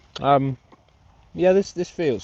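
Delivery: speaking with mouth full. Talking into the mic over a breakfast Mars bar, talking while chewing. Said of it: "Sorry about the chewing".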